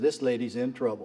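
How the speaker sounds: ordinary talk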